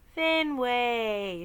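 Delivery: sweetly calling out, drawn-out and stretched. Narrator reads a woman calling the narrator by name, sweet calling voice. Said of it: "she calls in a sweet voice".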